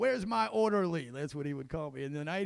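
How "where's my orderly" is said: mock, demanding, hollering yell. Retelling how a friend always called out for his orderly: imitating someone yelling. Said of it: "He was always yelling".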